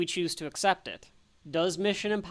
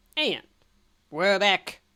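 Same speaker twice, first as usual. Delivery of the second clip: put-on loud, terrible, bad old spy-movie voice; 5 dB louder than usual. Host coming back from a commercial break: terrible spy voice. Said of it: "That was a terrible spy voice".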